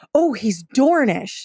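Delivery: eager, thrilled, excited gushing. Retelling a young girl's reaction at the joust: imitating someone excited. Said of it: "She's excited and she goes".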